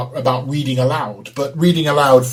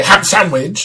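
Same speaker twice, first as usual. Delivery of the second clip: plainly angry delivery with raised pitch; 6 semitones higher than usual. Explaining a voice game, giving an example of the phrase in an angry voice. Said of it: "that would be my angry voice".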